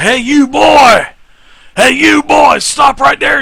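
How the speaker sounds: shrill, very loud, high biker yell. Voicing bikers who catch a player sneaking: biker character voice. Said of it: "a couple of the, the bikers say".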